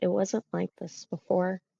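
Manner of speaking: very quiet, soft, uneasy hushed whisper. Voicing a character who goes quiet, whispering quietly. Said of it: "just kinda whispers".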